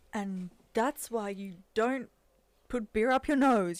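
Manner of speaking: booming movie narrator voice, very loud, grand, slow. Describing a movie scene where a voice cuts in, booming movie voice. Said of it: "this booming voice comes in and he's like".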